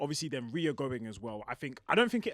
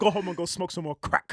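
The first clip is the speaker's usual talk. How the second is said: put-on insulting wrestler voice, higher and louder; 4 semitones higher, 8 dB louder than usual. Retelling a wrestler's promo insulting the crowd: imitating Gunther's promo. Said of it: "He was saying".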